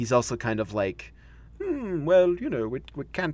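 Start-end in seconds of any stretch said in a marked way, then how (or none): 1.6-3.3 high pitch with big swoops. Imitating the First Doctor for the other speaker: First Doctor impression. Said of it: "This is the impression part".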